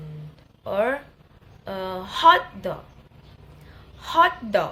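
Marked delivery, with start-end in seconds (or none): 1.7-4.7 HOT hit hard and loud, dog said lighter. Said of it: "pattern of secondary stress is common for compound word".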